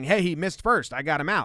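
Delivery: ordinary delivery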